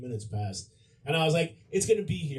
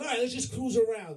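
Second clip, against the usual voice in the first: Italian guy voice, pitched up; 9 semitones higher than usual. Retelling what the limo driver said once inside: imitating a Goomba Italian guy. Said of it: "this fucking Goomba Italian guy".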